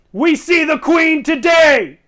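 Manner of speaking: shrill, very loud, high-pitched shouting. Voicing the archers on the wall answering: yelling battle cry. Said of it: "Then he yells".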